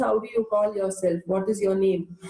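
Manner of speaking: ordinary delivery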